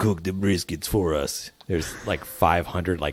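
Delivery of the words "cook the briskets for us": put-on Russian accent. Acting out imagined captors ordering a cook around: Russian accent. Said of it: "Was that a Russian accent?".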